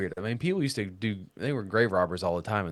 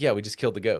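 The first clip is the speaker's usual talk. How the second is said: play-acted casual, nonchalant, matter-of-fact offhand delivery. Retelling what someone said about a killed goat: imitating Ben saying it nonchalantly. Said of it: "he said it so nonchalantly".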